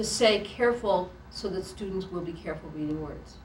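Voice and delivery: plain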